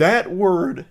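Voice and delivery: high voice, breaking mid-phrase. Commentating on a video, the speaker's voice cracks on a word. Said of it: "I had a big voice crack there".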